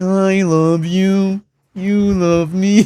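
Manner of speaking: high-pitched, drawn-out character voice. Imitating the sound compared to Barney: Barney voice. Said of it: "I sound like Barney".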